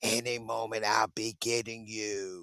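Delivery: low, flat, creepy scary-movie horror-villain voice.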